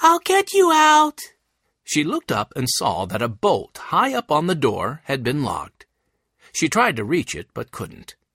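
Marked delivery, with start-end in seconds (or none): 0.0-1.2 very high, loud, raised-voice shout. Reading a story, Violet calls to Elena, who is locked behind a door: said loudly. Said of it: "Violet said loudly".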